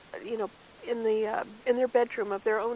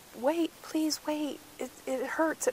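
put-on scream of pain, much higher pitch; 6 semitones higher than usual. Retelling his girlfriend's words during a forceps delivery, imitating screaming in pain. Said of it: "She was screaming".

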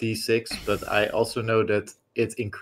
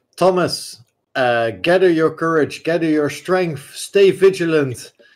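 yelling out, higher and louder; 7 semitones higher, 8 dB louder than usual. In a tabletop game, a bard calls to Thomas attacking the creature, yelling out to Thomas. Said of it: "I'm just a playwright".

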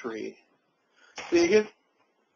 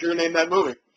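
ordinary delivery

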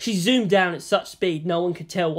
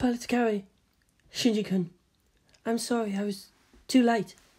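gentle, hushed, soft voice, slightly high in pitch; 5 semitones higher, 4 dB quieter than usual. A narrator reads a girl answering a boy who has just greeted her, soft. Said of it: "she said softly".

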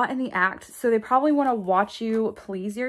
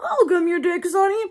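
high, put-on old-woman voice; 8 semitones higher than usual. Describing opposite extremes, voicing an old granny: old granny voice. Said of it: "I used a granny voice to say that".

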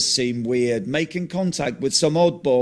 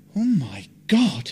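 subdued, low-key, said half to himself. Narrator reads a character's line while a camera keeps filming; saying quietly. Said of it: "Martin says quietly".

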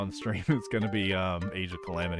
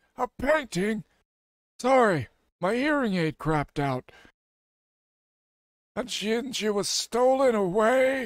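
put-on drowsy, weak, failing voice, much higher; 13 semitones higher than usual. Voicing a game character who talks to the player, in a drowsy, weak voice. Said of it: "I dozed off again. ... My voice is going".

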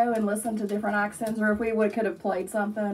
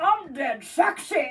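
put-on Scottish character voice, pitched higher; 6 semitones higher than usual. Joining in with another line after the other speaker's impression: Fat Bastard voice. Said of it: "Fat Bastard".

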